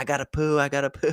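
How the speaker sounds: put-on high-pitched, small child yelling. Retelling how a six-year-old yelled from the back seat: imitating a child yelling. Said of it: "he's yelling in the back".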